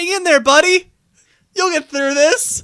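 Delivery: very loud, high-pitched shouted yell. Retelling calling out to a character during a movie: imitating own yell. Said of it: "I yell out in the middle".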